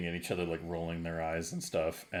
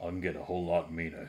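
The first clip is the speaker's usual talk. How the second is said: threatening guard voice, quieter; 4 dB quieter than usual. Voicing a guard who leans in toward a goblin: menacing guard voice. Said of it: "Conf kinda leans in closer to you".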